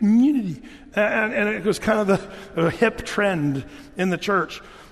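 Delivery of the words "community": "community" raised, with a little nasal twang. Describing a hip church trend in saying the word, slightly nasal 'community'. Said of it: "you had to say it that way with a little nasal".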